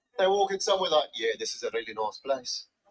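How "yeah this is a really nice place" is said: ominous, menacing South African accent, very low. Imitating South Africans walking into a nice place, in a menacing South African accent. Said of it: "sound like they're about to hijack it".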